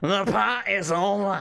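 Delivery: loud, booming wrestling ring announcer voice. Retelling a wrestler's line to R-Truth: imitating Drew McIntyre. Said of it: "Drew McIntyre came out with the microphone and he goes".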